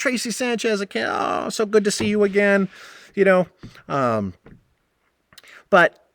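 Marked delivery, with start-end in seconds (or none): 0.0-2.7 high, super nice, overly sweet sugary voice. Retelling greeting a guest who showed up: imitating own overly nice greeting. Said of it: "I was super nice to her".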